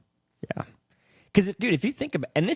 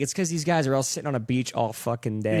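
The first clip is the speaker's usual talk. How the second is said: usual speaking voice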